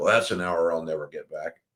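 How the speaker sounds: put-on muttering under breath. Retelling a colleague's remark on leaving a meeting: imitating muttering under breath. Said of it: "I heard him kind of mutter under his breath".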